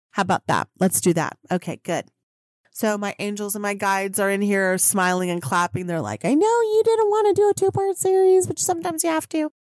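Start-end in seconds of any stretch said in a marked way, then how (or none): 6.3-9.6 squeaky, very high, weird yelling cartoon voice. Quoting spirit guides scolding the speaker, in their weird yelling voice. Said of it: "They yell at me in that weird voice".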